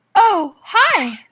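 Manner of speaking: sweet, cheery, pitched very high. Reading a role aloud, greeting the squirrel at the opened door: said with a smile. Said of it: "You said with a smile".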